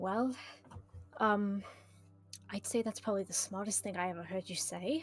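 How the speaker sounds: very, very quiet, hushed voice. Replying to a whispered plan in close quarters: very, very quiet. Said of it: "and I say this very, very quietly".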